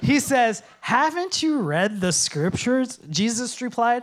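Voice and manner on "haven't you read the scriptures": put-on pointed, sarcastic tone. Quoting a question to Bible scholars: sarcastic Jesus voice. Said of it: "I like to hear it sarcastically".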